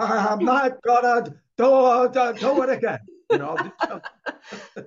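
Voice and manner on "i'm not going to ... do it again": drawn-out joking character voice, high, loud and slow. Showing how a self-talk line sounds done like Jim from Taxi: Jim from Taxi voice. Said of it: "I'll do it like Jim from Taxi".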